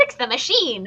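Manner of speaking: barking cartoon villain voice. Retelling a reenacted movie scene, shouting an order: Doofenshmirtz voice. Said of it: "he was in Doofenshmirtz's voice".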